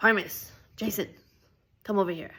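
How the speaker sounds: very scary, stern, calling-out voice. Imitating someone calling Parmis and Jason over, put-on scary voice. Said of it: "in a very scary voice".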